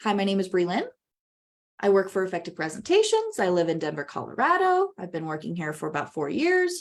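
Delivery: upspeak, every sentence ending rising like questions. A presenter demonstrates a common unintentional vocal habit, upspeak, every sentence rising. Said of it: "Do you hear how my tone goes up".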